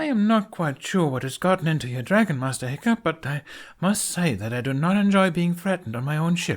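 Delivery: flustered, high, loud stammering. Johann stumbles back from an angry Night Fury and speaks to Hiccup, stammering. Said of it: "he stammers out".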